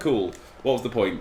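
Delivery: ordinary delivery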